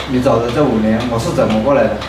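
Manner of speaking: ordinary delivery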